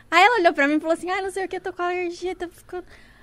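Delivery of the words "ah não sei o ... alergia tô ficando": mock near-tearful, whimpering, whiny complaint. Retelling what a friend with an allergy said: imitating someone half crying. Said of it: "ela já falou de um jeito meio chorando".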